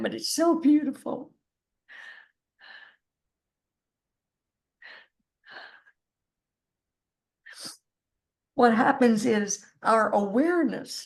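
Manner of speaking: tearful, weeping through the words. A speaker apologizes for crying partway through an explanation; crying while speaking. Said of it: "sorry, I'm crying".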